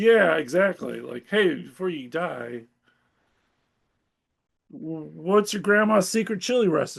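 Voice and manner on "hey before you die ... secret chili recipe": put-on nonchalant voice. Retelling how a comic character reacted to a death: imitating a nonchalant character. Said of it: "he's so nonchalant about it".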